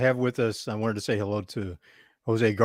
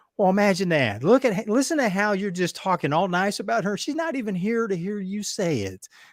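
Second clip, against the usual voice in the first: teasing southern drawl, pitched high; 9 semitones higher than usual. Retelling how a woman teased him for praising his wife: imitating Gracie's southern drawl. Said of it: "she had this southern drawl".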